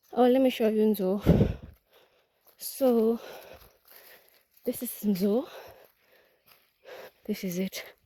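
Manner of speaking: winded, panting, out of breath. Showing the nzo plant during harvest season in Ukambani, out of breath and panting. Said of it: "I'm already panting".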